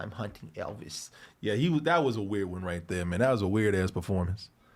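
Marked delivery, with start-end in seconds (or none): 0.0-1.1 whispered cartoon hunter voice, very quiet, barely audible. Describing a favorite movie performance by Tom Hanks: Tom Hanks as Elmer Fudd, quiet. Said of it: "where he talk like this. He'd be very, very quiet".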